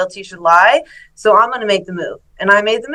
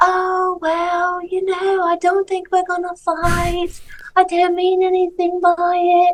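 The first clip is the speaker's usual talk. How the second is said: dopey, very high, slow, dumb-sounding drawl; 10 semitones higher than usual. Retelling a phone call with a rival fighter: imitating her dumb voice. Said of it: "in her fucking dumbass voice".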